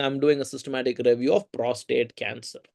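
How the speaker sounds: ordinary delivery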